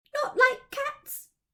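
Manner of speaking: very high, shrill, impassioned loud outcry. Narrator reading the Mouse's cry to Alice, shrill and passionate. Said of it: "cried the Mouse in a shrill, passionate voice".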